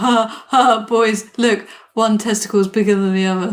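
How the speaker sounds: put-on teenage boy voice. Joking how the character would act as a teenage boy: imitating a teenage boy. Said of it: "If he was, like, a teenage boy, he'd be like".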